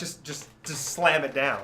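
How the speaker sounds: normal talking voice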